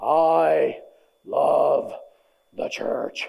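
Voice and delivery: deep, rich, resonant, heartfelt, long creaky "I". Recalling what a man at his old institution used to say, imitating Mr. Mills's deep voice. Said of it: "with his deep, rich voice say".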